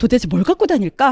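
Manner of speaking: ordinary talk, nothing marked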